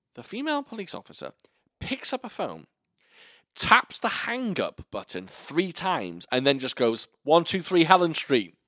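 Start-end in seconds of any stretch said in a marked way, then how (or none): 7.2-8.5 abrupt, sudden, high-pitched yell. Retelling a female police officer calling in an address, imitating someone yelling. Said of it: "Why is she just yelling an address?".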